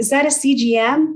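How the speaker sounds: high-pitched yell. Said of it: "holding up traffic to yell".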